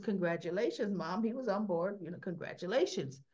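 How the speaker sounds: ordinary talk, nothing marked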